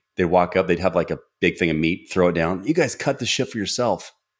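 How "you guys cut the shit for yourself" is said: acted-out, snarky, sarcastic, high-pitched waiter voice. Retelling how waiters at a medieval-style restaurant threw food down: imitating sarcastic medieval waiters. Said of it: "this sarcastic medieval feel".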